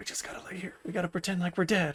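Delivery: very quiet whisper, slightly high-pitched. Retelling a sketch where soldiers pretend to be dead: imitating whispering soldiers. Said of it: "And they're whispering to each other".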